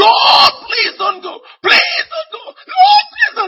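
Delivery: very high, very loud, shrill pleading scream. Speaker retells falling to the ground as the lord walked away: reenacted scream. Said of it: "fell on my belly to the ground and screamed".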